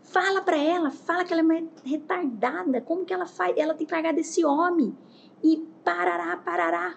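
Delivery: frantic, stressed-out, crazed rant at a high pitch. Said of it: "a mulher que tava louca, estressada, começou a me contar".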